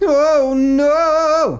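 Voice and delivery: very high, loud cry with long stretched no. Demonstrating a man's reaction when his cake vanishes: the stolen-cake cry. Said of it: "The stolen cake cry".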